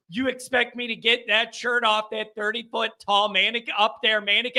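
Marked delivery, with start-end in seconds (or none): none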